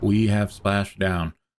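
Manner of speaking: flat robotic monotone voice. Mocking their own earlier call as monotone, in a flat robotic monotone. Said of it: "I'm like, we have splashdown. I'm a robot".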